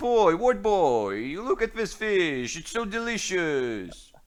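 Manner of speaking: very high, loud, drawn-out market hawker call. Voicing a merchant who shoves fish at a player: fish merchant voice. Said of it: "He's like".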